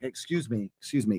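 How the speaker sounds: cool, unhurried, unthreatening, slow and low. Showing how he gets people's attention, in a calm, slow, cool voice. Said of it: "in a very calm, slow, cool way".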